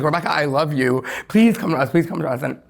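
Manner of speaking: put-on tearful crying voice. Retelling a girl who came up crying and begging: imitating someone crying. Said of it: "she's, like, crying".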